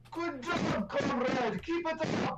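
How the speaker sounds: high shouted cheer, shouting. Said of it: "I shout down the hallway".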